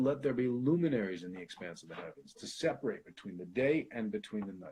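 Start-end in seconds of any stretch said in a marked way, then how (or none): none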